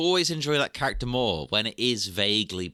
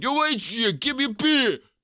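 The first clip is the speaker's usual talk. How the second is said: put-on drunk-sounding voice, higher pitch; 13 semitones higher, 4 dB louder than usual. Voicing a character asking the barmaid for a beer: Stallone impression. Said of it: "Stallone impression".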